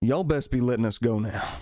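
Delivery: country farmer voice. Storyteller voices one of the farmers speaking to the group, deeper-voiced farmer. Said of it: "the one with the deeper voice".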